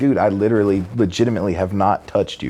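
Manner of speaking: ordinary delivery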